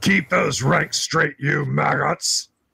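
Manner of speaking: rough, gruff hobgoblin voice. Voicing a hobgoblin ordering soldiers to keep ranks: gruff loud hobgoblin voice. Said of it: "you hear many gruff, loud voices".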